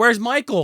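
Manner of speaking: put-on angry ranting. Retelling a movie scene, a character searching for someone: imitating an angry woman.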